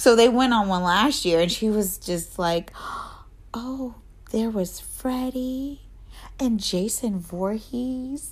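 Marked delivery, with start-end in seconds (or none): 3.5-8.3 put-on slow, soft, drawn-out awestruck little girl voice. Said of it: "the way she says Jason".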